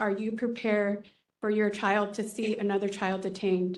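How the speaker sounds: ordinary delivery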